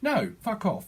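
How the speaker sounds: high, angry, dismissive brush-off.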